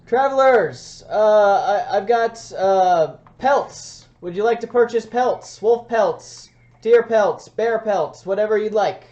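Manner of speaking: very loud, high, drawn-out yell. Voicing a pelt seller with a push cart calling to passing travelers: merchant yelling to travelers. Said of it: "he's just yelling".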